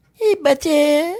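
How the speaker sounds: high-pitched pet voice. Showing how you call your pet Butter, high-pitched voice for a pet. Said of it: "high pitch".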